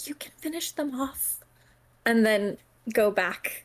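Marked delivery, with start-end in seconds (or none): 0.0-1.4 barely audible, hushed whisper, pitched up. Voicing a character in a game scene: quiet whisper. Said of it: "she's just gonna kind of quietly whisper".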